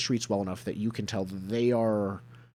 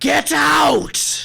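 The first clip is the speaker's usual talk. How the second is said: very high, rough yell with an eerie, unearthly undertone; 8 dB louder than usual. Narrator voices Skurlock whirling on the players, Skurlock yelling, supernatural undertone. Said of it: "yells with this like like supernatural undertone to his voice".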